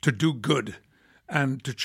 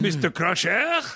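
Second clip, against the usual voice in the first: put-on French accent with raised pitch; 5 semitones higher than usual. Imagining a line with the French accent that was dropped: Inspector Clouseau French accent. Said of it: "Inspector Clouseau".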